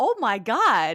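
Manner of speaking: high, loud, stunned, shocked disbelief.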